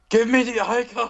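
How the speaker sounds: loud, very high shout. Voice what you keep hearing in the back of your mind, as an Arnold Schwarzenegger impression. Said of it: "Arnold Schwarzenegger going".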